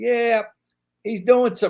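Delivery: put-on thick rural accent, very high. Retelling what a woman said on the phone, in a heavy country accent. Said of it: "She got a real heavy country accent".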